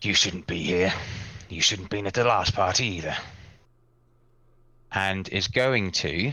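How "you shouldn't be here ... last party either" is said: big devil voice, dropped way down, much deeper. Narrating a game, the speaker voices a devil addressing the listener, much deeper devil voice. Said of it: "goes in a lot deeper voice".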